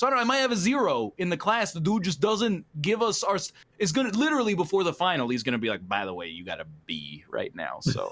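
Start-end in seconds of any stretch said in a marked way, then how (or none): 5.9-8.1 very low, lazy professor voice. Imitating a professor handing back grades just before the final: imitating a lazy professor's voice. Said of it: "lazy professor voice that you gave him".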